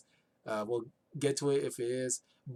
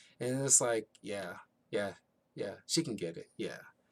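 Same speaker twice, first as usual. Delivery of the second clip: plain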